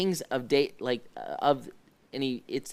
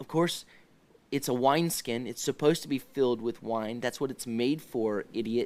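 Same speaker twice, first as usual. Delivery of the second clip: plain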